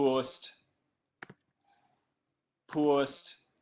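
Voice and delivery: joke put-on Geordie accent. Speaker greeting a live audience posts a tweet, in a mock Geordie accent. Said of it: "apologies for the Geordie accent".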